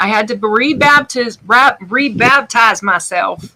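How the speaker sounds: slow Southern drawl, rebaptize drawn out. Telling another speaker about making art again: Southern accent. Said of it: "I love that Southern accent".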